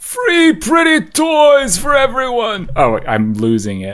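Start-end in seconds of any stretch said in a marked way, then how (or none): 0.0-2.7 high-pitched voice that cracks and falls apart. Joking about redistributing toys, Bernie Sanders impression. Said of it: "Thanks, Bernie".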